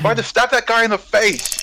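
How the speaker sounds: shrill, very high in-character battle cry. A player yelling her character's line during the game, yelling in character. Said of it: "she yells".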